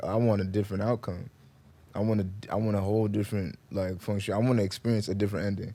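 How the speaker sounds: ordinary delivery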